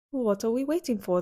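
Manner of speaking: plain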